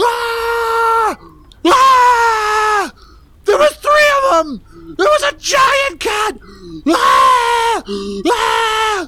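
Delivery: panicked, very high shrieking screams. A narrator reads a voice crying out from outside the kitchen, screaming.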